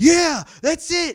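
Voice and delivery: high, slow, excited, thrilled yell. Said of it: "I was so excited".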